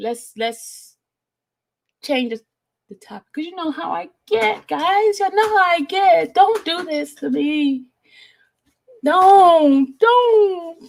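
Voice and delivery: on the verge of crying. Speaker asks the group to change the topic, holding back tears. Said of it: "I don't want to start crying".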